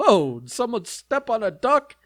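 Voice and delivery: high, jokey comic voice, tossed off. Suggesting a line to say after a badly timed fart: Rodney Dangerfield voice. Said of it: "do your best Rodney Dangerfield voice".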